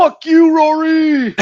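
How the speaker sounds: very loud, very high-pitched shrill yell. Retelling a fan's outburst as the stadium quieted: imitating a fan yelling. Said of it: "The guy who just yelled".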